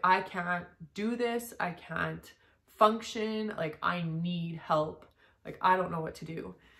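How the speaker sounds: imitated bawling, sobbing voice. Retelling a call to the gynecologist: imitating own past bawling plea. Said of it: "I call my gynecologist and I'm bawling".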